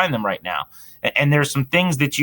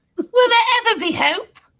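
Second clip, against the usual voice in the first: put-on little British boy voice, higher. Joking about a losing football team as a pitiful little boy: Tiny Tim voice. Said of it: "You're the little British boy".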